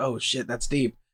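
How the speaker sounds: hushed, half-whispered murmur under the breath. Recalling a moving movie scene, acting out their own reaction: retelling a half-whisper to self. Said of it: "I'm like whispering to myself".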